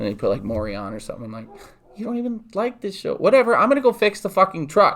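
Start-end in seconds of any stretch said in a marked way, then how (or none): 1.9-5.0 put-on childish, very high-pitched kid's voice. Retelling a childhood argument over the TV: imitating how a kid says it. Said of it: "as a kid".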